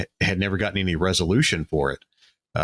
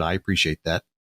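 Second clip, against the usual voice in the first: flat, emotionless put-on delivery. Retelling a man's answer to the speaker's compliment, imitating a deadpan reply. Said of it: "And he just deadpanned".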